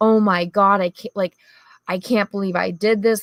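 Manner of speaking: mock crying, tearful sobbing.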